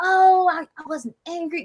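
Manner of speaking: mocking, very high, slow, drawn-out voice. Retelling what a woman in a clip said, mocking imitation of her denial. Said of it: "she's like".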